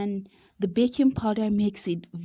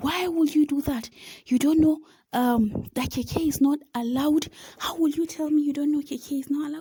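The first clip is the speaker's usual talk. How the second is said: mock high-pitched, nonstop yelling; 6 semitones higher than usual. Recounting being scolded for bringing kk in, speaker is retelling a man's yelling. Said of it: "so he kept yelling".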